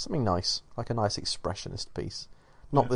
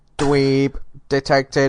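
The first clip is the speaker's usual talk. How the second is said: robotic voice, higher and louder; 4 semitones higher, 5 dB louder than usual. Mocking a friend who brings tech news: robot voice. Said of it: "I like that you did it in a robot voice".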